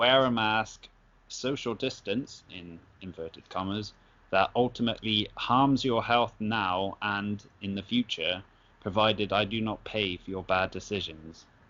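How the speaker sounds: ordinary talk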